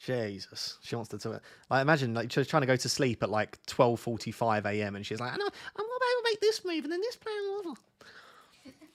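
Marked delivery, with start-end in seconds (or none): 5.4-8.7 voice pitched way up, very high. Imitating the girlfriend planning a late-night transfer: imitating girlfriend. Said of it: "That's my impression of you".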